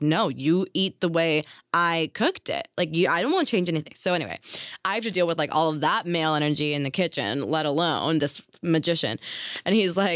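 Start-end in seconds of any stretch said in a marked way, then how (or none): none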